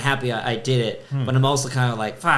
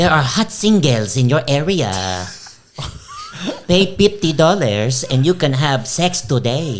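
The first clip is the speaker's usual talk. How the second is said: high, loud, off-kilter American accent, swapped consonants; 2 semitones higher, 6 dB louder than usual. Describing an accent to the others, the speaker mimics it: high-pitched weird american accent. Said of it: "it's actually it's it's a lot more high pitched".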